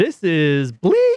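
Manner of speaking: goofy, squeaky, high-pitched, playful little voice. Imitating himself watching it, the speaker says it in a high-pitched voice. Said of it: "say bleak in a high-pitched voice".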